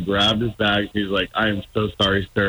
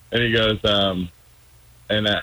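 plain

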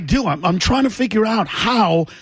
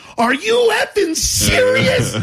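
very high-pitched blurted yell; 14 semitones higher than usual. Telling a story, the speaker reenacts their own shout at a woman; retelling a yell. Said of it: "I just yelled out".

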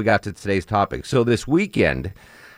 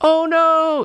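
mock old woman's bawling cry, very high, sobbing wail; 3 dB louder than usual. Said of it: "Old woman just starts bawling, sobbing".

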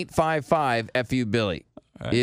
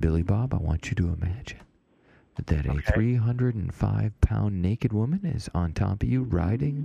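put-on ASMR-style soft voice; 6 semitones lower than usual. Talking to a caller on the phone during a bit; ASMR voice. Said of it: "My MSR voice real quick".

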